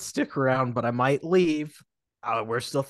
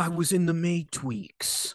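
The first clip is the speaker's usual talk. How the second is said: put-on laid-back actor voice, higher; 3 semitones higher than usual. Answering a question about the Matrix as Keanu Reeves: Keanu Reeves impression. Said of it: "It's Keanu Reeves".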